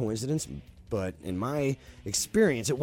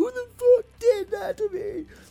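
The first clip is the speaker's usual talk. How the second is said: put-on very high, shrill, loud sobbing wail; 8 dB louder than usual. Retelling how a drunk woman, crying, accused someone of choking her: imitating her bawling. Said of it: "She's bawling her eyes out".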